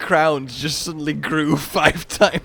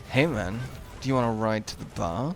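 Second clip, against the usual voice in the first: flirtatious, seductive, suggestive delivery; 6 semitones lower, 7 dB quieter than usual. Showing the difference in how a line can sound: seductive. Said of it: "sorta sounded a bit more, like, seductive".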